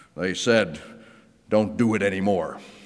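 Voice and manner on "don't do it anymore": acted, mock-solemn, serious tone. Speaker quoting what the robed officials told Peter, retelling in solemn, serious tones. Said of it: "in very solemn, serious tones".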